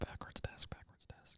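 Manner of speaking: soft whisper.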